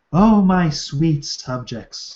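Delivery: very slow, penetrating, seductive coo. Reading a character's line aloud from a story, seductive cooing voice. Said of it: "she coos, her voice seductive and penetrating".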